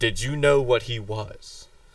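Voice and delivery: firm, stern tone. A tabletop player asks in character, hand on his rapier, very sternly. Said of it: "ask very sternly".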